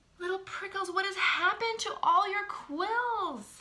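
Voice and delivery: quavering, very high, trembling gasped cry. Reading a story aloud, Missus Hoot gasps at Little Prickles in a trembling voice. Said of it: "she asked in a trembling voice".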